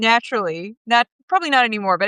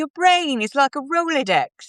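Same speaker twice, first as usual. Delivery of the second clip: fake British accent, higher pitch; 5 semitones higher than usual. Retelling what a British colleague once said: bad British accent. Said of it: "It's my bad British accent".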